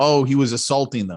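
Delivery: ordinary delivery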